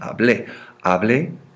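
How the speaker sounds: stress on final syllable of hablé. Showing learners where the written accent falls: stress on final syllable of hablé. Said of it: "You hear that accent? You feel that accent?".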